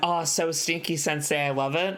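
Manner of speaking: ordinary talk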